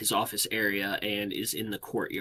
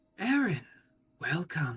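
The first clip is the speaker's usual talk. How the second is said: small, high, swooping little voice; 6 semitones higher than usual. Narrator voicing a young lord greeting Aaron, in a small voice. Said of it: "a small voice calls out and goes".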